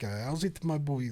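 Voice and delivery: put-on South African accent. Australians in Miami retelling a South African barman's greeting, imitating South African accent. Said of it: "like South African".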